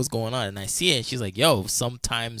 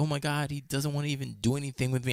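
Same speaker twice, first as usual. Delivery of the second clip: put-on tearful voice, quieter; 5 dB quieter than usual. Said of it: "she would be on the phone crying".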